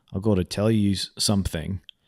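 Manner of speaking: put-on low, soft Australian accent. Talking about the older movies, Mel Gibson Australian accent impression. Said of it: "doing an Australian accent where he's like".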